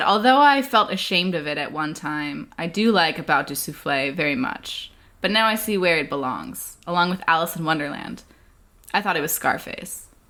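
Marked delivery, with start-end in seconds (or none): none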